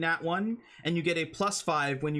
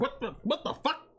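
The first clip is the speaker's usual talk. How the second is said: high-pitched, startled, caught-off-guard outburst; 7 semitones higher than usual. Voicing the enemy as its energy shield dissipates: voicing the enemy's startled reaction. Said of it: "he's like".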